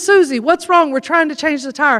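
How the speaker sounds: ordinary talk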